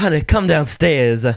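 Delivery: put-on Southern voice. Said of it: "that biscuit and gravy voice".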